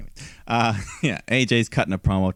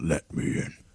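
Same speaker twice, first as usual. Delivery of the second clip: breathy, all-breath whispered villain character voice; 5 semitones lower, 6 dB quieter than usual. Correcting another speaker's imitation of a line: the Fiend's voice. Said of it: "with the Fiend's voice overlaid".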